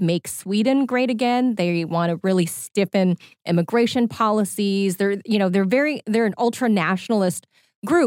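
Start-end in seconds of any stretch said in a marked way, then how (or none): none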